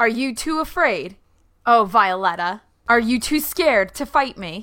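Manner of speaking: jeering, goading taunt, called out loudly. A player's character taunts an opponent mid-fight, shouting a taunt. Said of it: "I think I shout".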